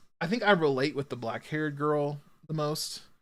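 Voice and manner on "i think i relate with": usual speaking voice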